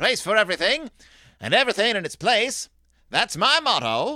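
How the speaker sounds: loud, high, storybook farmer character voice. Reading a story aloud, trying out Farmer Ben voice. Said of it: "How do we do Farmer Ben's voice?".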